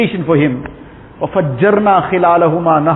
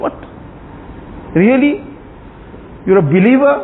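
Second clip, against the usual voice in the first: high-pitched, heavily sarcastic tone; 6 semitones higher than usual. Telling a story about two men, the speaker quotes one's reply: retelling a very sarcastic question. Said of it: "Very sarcastically".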